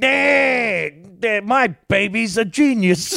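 very high-pitched, slow, long drawn-out "eh". Trying to quote a cartoon character: Peter Griffin voice. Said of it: "I'm trying to do Peter Griffin".

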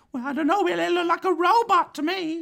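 very high, tiny little character voice. Voicing a tiny two-foot-tall guy the players pick up: tiny little guy's voice. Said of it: "You pick up this tiny little guy. He's maybe 2 feet tall".

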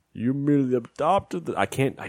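put-on villain character voice. Attempting a movie villain's line as a Bane voice impression. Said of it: "Bane is so hard to do".

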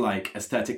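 normal talking voice

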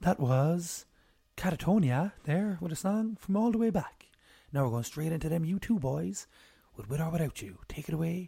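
radio DJ announcer voice with on-air presenter patter. Naming jobs they'd be good at, the speaker auditions in a radio dj voice. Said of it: "So I could speak like this".

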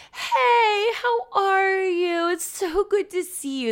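very high, overly exuberant, fake gushing voice. Describing inauthentic people, imitating a fake overexcited greeting. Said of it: "this super fake".

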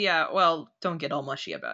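low, soft, fast, dismissive voice. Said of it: "Pizzazz goes".

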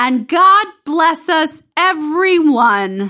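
play-acted high, drawn-out scream. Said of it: "by screaming".

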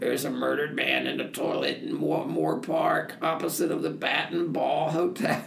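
raspy, hoarse, rough voice. Retelling a man's phone call to police about a murder, hoarse voice. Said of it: "a man with a hoarse voice said".

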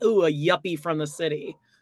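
ordinary talk

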